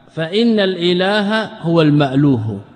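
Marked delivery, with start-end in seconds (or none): none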